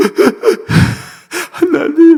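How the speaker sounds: put-on high, loud wailing sob in a child's voice.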